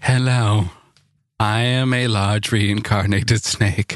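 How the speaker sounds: low mechanical computer voice. Reacting to a headline about a snake robot on a show, HAL 9000 voice. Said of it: "Saying it like HAL 9000".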